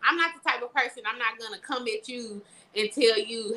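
ordinary talk

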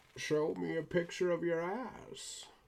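slow, muffled voice as if through a box. Improvising with a box over the mouth, Bane voice through a box. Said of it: "I don't have a cup to do the Bane voice with".

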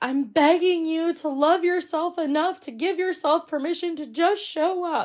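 put-on breathless sobbing, voice very high. Recounting what she said on late-night team Zooms, imitating someone sobbing breathlessly. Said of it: "she's like crying so hard she can't breathe".

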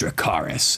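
whispered low and soft. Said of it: "And that's when she says".

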